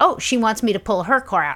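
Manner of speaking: normal talking voice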